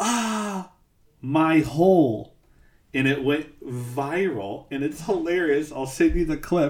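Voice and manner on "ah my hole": sudden high-pitched scream, acted. Retelling what a wrestler screamed after turning around: imitating a wrestler screaming. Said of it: "turns and screams".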